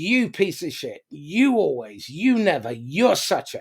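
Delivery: accusing tone with heavy, jabbing stress on every "you". Demonstrating how the persecutor talks, stressing "you". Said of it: "the pronoun you in capital letters".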